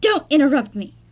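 mock loud, stern, mean boss voice. Recapping a scene where Coulson talks to Lincoln, Coulson's put-on mean boss voice. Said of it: "He put on his mean boss voice".

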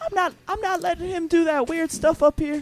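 very high-pitched put-on voice. Quoting a man at an open mic: very high-pitched put-on voice. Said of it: "he had a very high pitched voice, and he was like".

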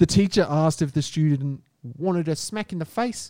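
attempted, put-on New Zealand accent. Retelling a news story about a teacher and a student, in an attempted New Zealand accent. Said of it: "I tried to do a New Zealand accent".

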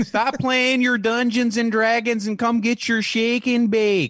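put-on very high scolding yell, thick North Dakota accent. Imitating a neighbor's mom yelling at him over Dungeons and Dragons, thick North Dakota yell. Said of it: "yell at him in this thick ass North".

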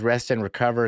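ordinary talk

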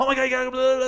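very high, gushing, rushed excited rattle. Showing how someone sounds when excited: excited, speaking really fast. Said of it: "speaking really fast".

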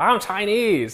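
over-the-top, very high, animated caricature voice. Retelling a comedian's joke: imitating an animated Chinese impression. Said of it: "very, like, animated impression".

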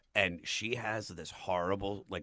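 ordinary talk, nothing marked

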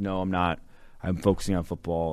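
ordinary talk

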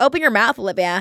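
put-on, attempted American accent. Quoting her friends in a festival crowd: attempted American accent. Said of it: "that was me trying to do an American accent".

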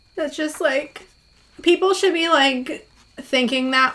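choked-up voice, on the verge of crying. Talking about a grieving mother's message of love, choking up, close to tears.

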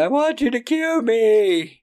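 very high scream, "me" stretched long. Retelling a film scene of a man begging strangers: imitating someone screaming. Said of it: "people screaming".

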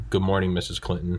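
ordinary talk, nothing marked

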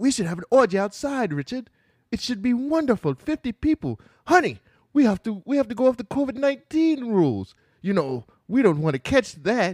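put-on British accent. Repeating the woman's line to richard again: british accent. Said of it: "that's a good British voice or not".

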